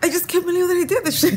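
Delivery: very high, loud, bursting into giggles. Talking about finally doing it themselves: giggling. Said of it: "But I can't stop giggling".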